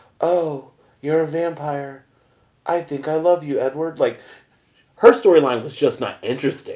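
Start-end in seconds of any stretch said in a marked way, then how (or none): 0.2-4.0 dull, lifeless, flat, slow monotone delivery. Speaker acts out Bella's lines from the movie in a monotone. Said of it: "it would have been monotone".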